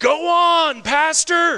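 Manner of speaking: shrill, very loud, high-pitched shout. Retelling a lady calling out during a sermon: imitating someone shouting. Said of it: "this lady shouts out".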